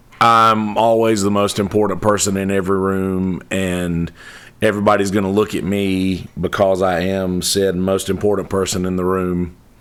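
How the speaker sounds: ordinary talk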